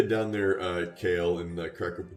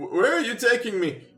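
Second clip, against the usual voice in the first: put-on elderly man voice, much higher. A kidnapped character questions his captor, in an old man voice. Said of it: "find a new old man voice".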